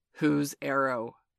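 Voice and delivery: stern, demanding tone. Reading a character facing the band, holding the arrow; sternly demanding. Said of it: "he demanded sternly".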